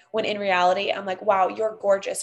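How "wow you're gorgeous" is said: ordinary talk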